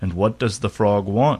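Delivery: ordinary delivery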